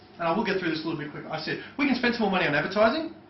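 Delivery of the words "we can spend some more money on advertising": question-like upward pitch lift on "advertising". Showing how upward tonality makes a statement a question, rising tone on advertising. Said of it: "That upward tonality, what does that imply? It's a question".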